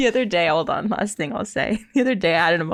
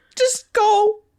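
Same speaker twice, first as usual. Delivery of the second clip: put-on very high, uncontrollable, wailing sobbing; 12 semitones higher than usual. Retelling telling a man to leave, imitating uncontrollable crying. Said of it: "I'm like uncontrollably crying".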